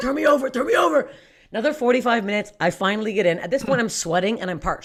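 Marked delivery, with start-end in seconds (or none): 0.0-1.1 put-on high, choked, strangled pleading voice. Retelling being stuck face down in a swing: imitating own choking plea.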